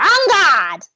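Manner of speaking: tiny, small, high-pitched elf voice. Narrating a scene, voicing a little voice that calls out from behind, little elf voice. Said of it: "this little voice goes".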